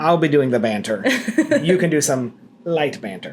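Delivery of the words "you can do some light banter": the word light given heavy stress. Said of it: "I wanna emphasize the word light".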